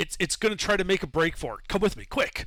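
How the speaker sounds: urgent, high yelling. Playing a character hurrying guards away: yelling at the guards. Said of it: "I'm yelling at the guards".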